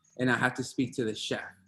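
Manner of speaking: usual speaking voice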